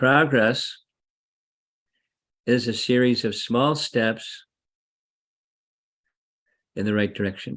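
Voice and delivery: very slow, deliberate, each word spaced out. Speaker sharing a principle they try to live by, saying it real slowly. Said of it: "I'll say it real slowly".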